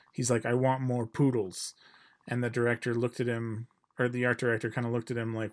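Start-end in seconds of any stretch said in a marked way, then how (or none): 0.5-1.8 put-on thick Hungarian accent. Retelling a director asking the art director for poodles: Michael Curtiz impression. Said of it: "had a very thick Hungarian accent".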